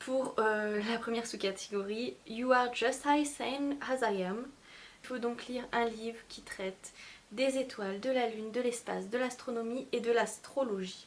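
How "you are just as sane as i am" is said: slow English in the speaker's own accent. Announcing a reading-challenge sub-category title in English, speaking English with an accent. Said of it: "vous faire écouter mon sublime accent anglais".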